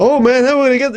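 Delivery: acted-out panicky wail, very high. Retelling a film scene, imitating Bill Paxton's character panicking. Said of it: "Bill Paxton's character is panicking".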